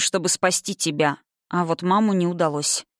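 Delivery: ordinary delivery, nothing marked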